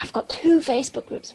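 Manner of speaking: hushed, secretive whisper. Answering a request to tell about the facebook group: whispering. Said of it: "I'm, like, whispering that".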